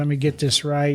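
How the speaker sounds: ordinary talk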